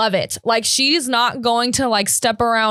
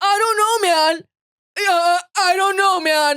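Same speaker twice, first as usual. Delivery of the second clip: high, flustered, stumbling stammer; 9 semitones higher than usual. Retelling how a man answered the mother's accusations: imitating stuttering excuses. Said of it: "he's like stuttering all the time".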